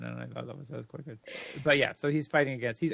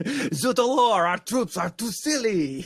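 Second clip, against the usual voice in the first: terrible put-on French accent; 7 semitones higher, 4 dB louder than usual. Joking about french troops in a war disastrous for france: bad french accent. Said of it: "That was the worst French accent I think I've done so far".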